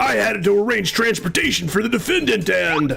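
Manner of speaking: throat-straining character voice. You are doing a voice for science on a stream, in a put-on voice that strains the throat. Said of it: "It's gonna kill my voice".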